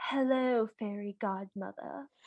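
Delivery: acted, soft, sultry, very bored mid-Atlantic voice. Retelling a Cinderella film phone call, first time the character is heard: mock sultry, bored voice. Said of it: "she's both like very sultry and also like very bored".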